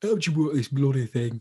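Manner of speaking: put-on Yorkshire accent. Quoting a film scene with Sean Bean behind the wheel: Sean Bean impression, Yorkshire accent. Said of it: "he's Yorkshire in that movie".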